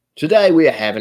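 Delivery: attempted English accent that comes out Australian. Trying the english accent again, it comes out australian. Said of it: "that's Australian".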